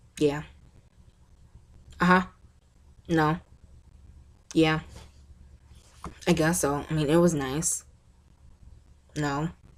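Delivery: bored, disinterested, checked-out delivery. Contrasting her own jumpy voice with how some people talk, in a bored, disinterested tone. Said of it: "talking like that makes it seem like you're boring them".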